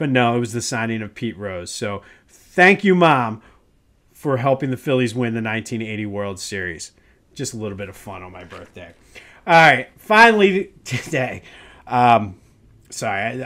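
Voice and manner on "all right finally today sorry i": slow speech, cracking up laughing mid-sentence. Starting the next segment and apologizing, laughing while talking. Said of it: "I'm just cracking up".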